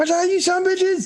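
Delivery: yelled battle cry. A tabletop player's character charges into combat, yelled battle cry. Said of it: "I yell out as I come in".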